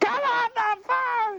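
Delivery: mock sweet, kind motherly voice, high and slow. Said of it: "a sweet, kind voice and said".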